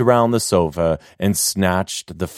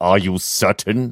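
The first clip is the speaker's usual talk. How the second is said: scornful, derisive sneering tone. A man with a discontented glower asks a question, sneering. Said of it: "his glower melting into a sneering frown as he said".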